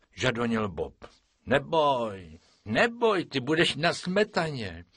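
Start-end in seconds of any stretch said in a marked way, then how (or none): 1.5-4.8 soothing, calming, comforting, consoling tone. Narrator reads Franta answering Bob's pleading, comforting. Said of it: "utěšoval Boba Franta".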